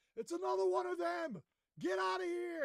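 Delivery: shrill, urgent, high and loud shouting. Rudy shouts to Irving and the running group: yelling a warning. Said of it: "Rudy's yelling".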